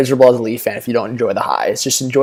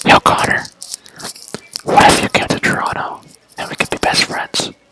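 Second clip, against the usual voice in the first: hushed secret whisper, close up. Acting out a player whispering in McDavid's ear: imitating Jason Spezza whispering. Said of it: "whispering in McDavid's ear".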